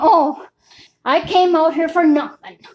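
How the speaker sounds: play-acted fed-up, annoyed, pissed-off griping. Retelling what she said coming out of the vet: imitating someone pissed off. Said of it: "she's all pissed off".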